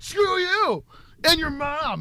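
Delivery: pretend furious shout. Imagining yelling at people sending hate tweets: mock angry yelling. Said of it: "Scary when you yell".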